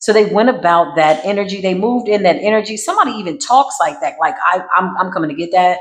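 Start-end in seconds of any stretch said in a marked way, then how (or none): 4.4-5.8 put-on cocky, condescending voice. Imitating someone who wants what another has: cocky, condescending voice. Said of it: "This is how they talking. Very cocky, very condescending".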